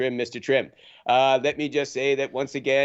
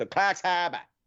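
put-on Boston accent; 4 semitones higher than usual. Speaker from Yarmouth County says a local place name like its residents: Boston accent. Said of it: "they all talk like they're from Boston".

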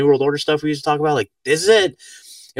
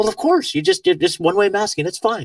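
put-on higher, casual, breezy, offhand matter-of-fact tone; 6 semitones higher than usual. Speaker imitates what people say to them, mimicking a matter-of-fact tone. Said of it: "they say it all matter of factly".

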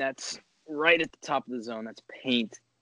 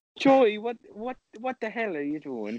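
put-on Irish accent yelling, higher; 8 semitones higher than usual. Imitating someone who yells about saying crap: yelling in an Irish accent. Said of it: "Yell at you in an Irish accent".

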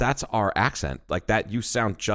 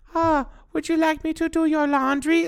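bad fake Chinese accent, very high, crude. Quoting someone mocking how a woman talks: imitating a bad chinese accent impression. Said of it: "in this, this horrible shit".

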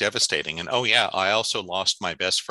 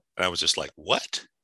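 plain

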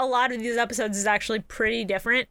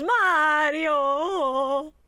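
put-on dazed, barely conscious, drawn-out calling; 4 semitones higher than usual. Retelling how a half comatose character calls out loudly: imitating a loud half-comatose call. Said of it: "really loudly in his half comatose state just goes".

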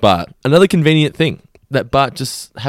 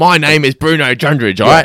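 put-on broad, remote outback Australian accent; 3 semitones higher, 3 dB louder than usual. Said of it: "his accent is one that they nail".

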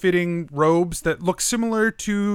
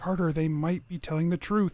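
hushed, soft half-whispered voice; 7 dB quieter than usual. A game master voices a dwarf speaking to her companion, half-whispering. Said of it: "and she's sort of whispers up".

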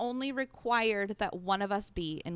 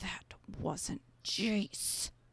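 put-on angry mom voice, quieter, slower; 4 dB quieter than usual. Recapping a show, the speaker retells a character's line in an angry grocery-store mom voice. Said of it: "turns on angry grocery store mom voice".

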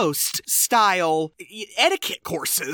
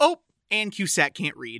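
plain

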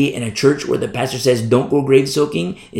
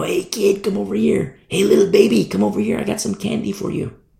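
wheedling, luring, coaxing voice, high and creaky; 7 semitones higher than usual. A speaker warning about being pulled away acts out a tempter, imitating a luring tempter. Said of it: "You know".

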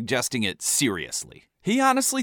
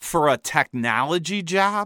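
slow, mocking, sarcastic jab; 3 semitones higher than usual. Retelling another person's reply about a job search, retelling a sarcastic question. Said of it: "Jessica asked sarcastically".

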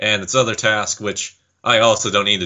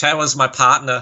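put-on voice, pitched higher; 5 semitones higher than usual. Imitating how Joey says a name: imitating Joey's Boston accent. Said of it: "the way that Joey says Tara".

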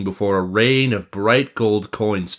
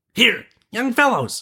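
very high calling cry; 14 semitones higher than usual. The prince, coming upon boys fighting brutally, crying out to them. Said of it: "cried the prince".

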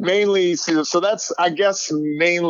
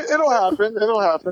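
voice going up high, pitched up; 5 semitones higher than usual. Answering teasing about why not married yet: voice going high. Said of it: "I heard that highness again".

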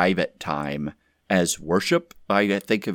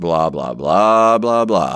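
loud, monotone, wordless wah-wah drone of syllables; 3 semitones lower, 5 dB louder than usual. Describing a corporate prayer response, in a Charlie Brown teacher voice. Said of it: "the Charlie Brown teacher voice".

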